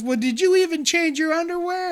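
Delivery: play-acted very high, shrill scolding scream. Retelling how a kid's mom screamed at him over the mic: imitating a screaming mom. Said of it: "start screaming at him".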